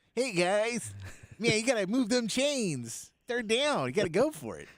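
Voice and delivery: high, laid-back surfer-guy voice. Mocking a retired quarterback as an announcer: imitating Tom Brady's surfer guy voice. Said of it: "it's a surfer guy voice".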